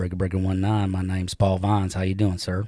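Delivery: golden, deep, low put-on Southern drawl. Trying a requested voice, speaker introduces himself in a deep southern drawl. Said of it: "a golden, deep Southern drawl voice".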